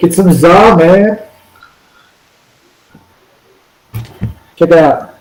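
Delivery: stoked, enthusiastic surfer dude voice. Showing someone how to say pizza, enthusiastic surfer voice. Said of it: "like a surfer".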